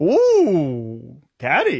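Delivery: fake sing-song Swedish accent, long ooh. Talking about where IKEA comes from, attempted Swedish accent. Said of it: "What accent was that?".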